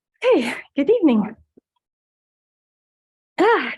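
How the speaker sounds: very loud, booming, out-of-breath voice. A speaker stepping up to the podium opens public remarks: out of breath. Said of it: "gotta catch my breath".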